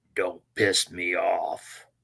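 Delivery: very slow, drawn-out, close-up menacing tone. Describing a man in a match, acting out his words: retelling a threat in the ear. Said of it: "he'd lean down right next to their ear".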